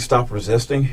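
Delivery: ordinary delivery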